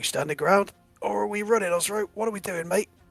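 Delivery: hushed voice. Voicing Dolph, who digs in his heels and asks Ozro: whispering. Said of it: "basically whispers to you".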